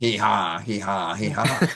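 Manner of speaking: put-on French Canadian accent. Joking about doing the French, mock French Canadian impression. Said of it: "his impression of a French Canadian".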